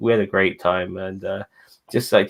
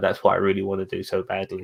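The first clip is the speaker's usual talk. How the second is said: normal talking voice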